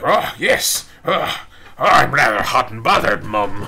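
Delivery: loud, terrible put-on British accent. Retelling what the robot seemed to say while he modded his gun, terrible accent. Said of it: "that was a terrible accent".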